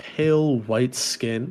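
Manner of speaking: usual speaking voice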